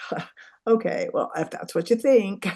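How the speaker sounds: mock dismissive, dry and truly sarcastic. Recalling answering people they disagreed with, imitating own sarcastic reply. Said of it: "I'd be like real sarcastic".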